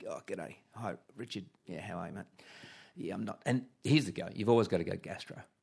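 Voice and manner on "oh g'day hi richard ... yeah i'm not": light, underplayed put-on croaky sick voice. Showing how to call in sick to the boss: fake croaky sick voice. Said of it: "your voice is gonna sound naturally croaky".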